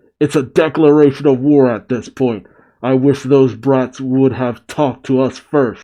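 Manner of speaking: ordinary talk, nothing marked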